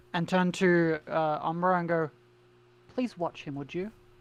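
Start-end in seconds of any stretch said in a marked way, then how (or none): 2.9-3.9 patronizing, condescending tone, quieter. Voicing a character speaking to another as she passes: condescending tone. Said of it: "kind of condescendingly".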